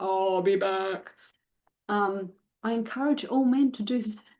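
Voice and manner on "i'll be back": cyborg action-movie voice. Suggesting a goodbye line to say to dogs: best Terminator voice. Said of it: "put on their best Terminator voice".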